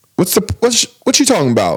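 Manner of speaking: imitated dialect in a woman's voice. Describing a prank video, the speaker imitates a lady's dialect. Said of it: "the dialect".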